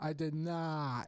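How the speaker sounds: slow, dragged-out drawl with each word stretched long. Comparing the actor's version of a movie line: James Franco as Wiseau, dragged out. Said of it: "dragging it out".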